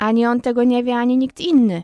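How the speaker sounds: firm, decided cut-in. Miss Polly interrupts her niece Pollyanna, in a decisive tone. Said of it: "przerwała panna Poli tonem zdecydowanym".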